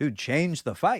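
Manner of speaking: mock yelling. Retelling what was yelled at a fighter during a bout: retelling own yelling. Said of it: "the whole time I was yelling at Barboza".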